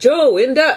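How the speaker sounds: loud, very high shouted bellow. Mother retelling calling her son downstairs, retelling a bellow. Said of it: "I bellowed at him".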